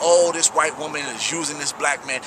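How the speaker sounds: ordinary delivery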